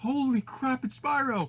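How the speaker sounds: high, loud, astonished surprised cry.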